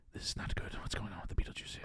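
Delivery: very quiet, breathy, barely audible whisper. Describing an actor on set, imitating Alec Baldwin whispering. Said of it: "He's always whispering".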